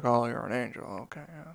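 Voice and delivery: very quiet mumble under the breath. Imitating the actor meeting an angel in a movie: Jimmy Stewart mumble. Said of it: "he just mumbles under his breath".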